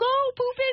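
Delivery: very high, squealed cheering yell. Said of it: "I can't help but yell".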